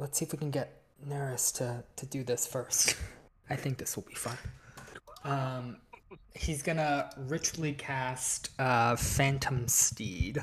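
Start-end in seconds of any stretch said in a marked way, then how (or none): 0.0-4.4 whispered aside, leaning in close. Voicing a character who leans over to another character: whispering. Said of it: "leans over and whispers to, to him".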